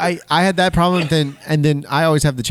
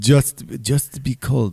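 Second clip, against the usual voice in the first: put-on German accent, lower pitched; 3 semitones lower than usual. Acting out a car-wreck scene while attempting a bad Werner Herzog accent. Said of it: "I can't even do his accent at all".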